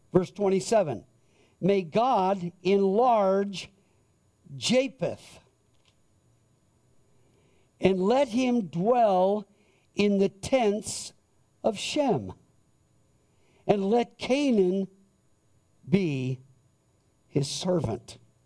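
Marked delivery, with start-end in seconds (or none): 1.5-18.1 very slow, deliberate reading voice. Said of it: "I'm gonna read it very slowly".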